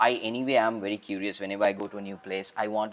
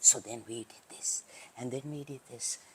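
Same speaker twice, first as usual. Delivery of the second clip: soft, breathy, whispered presenting voice; 3 semitones higher, 8 dB quieter than usual. Retelling presenting to a room in the dark after a power cut, whisper. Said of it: "but with in a sort of whisper".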